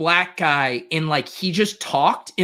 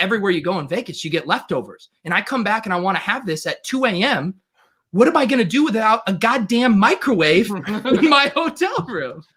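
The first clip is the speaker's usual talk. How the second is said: acted offended tone in a man's voice; 3 semitones higher than usual. Retelling a man's complaint, imitating an offended man. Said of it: "he was so offended about like".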